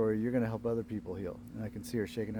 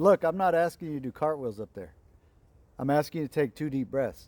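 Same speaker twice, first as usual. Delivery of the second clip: play-acted voice, slightly raised, pitched up a little; 3 semitones higher, 4 dB louder than usual. Retelling how he urged a woman to take two deep breaths, with slightly raised voice. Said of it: "I elevated my voice and frequency a little bit".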